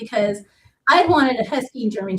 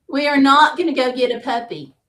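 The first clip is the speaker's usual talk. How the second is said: put-on loud voice; 3 semitones higher than usual. Retelling someone refusing to get a puppy: imitating a loud voice.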